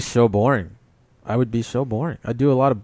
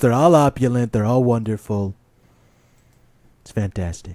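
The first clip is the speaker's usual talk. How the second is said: put-on boastful billionaire voice. Joking about a rich man being called broke: Trump impression. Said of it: "It's my best Trump".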